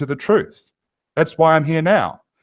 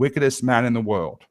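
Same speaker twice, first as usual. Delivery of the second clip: plain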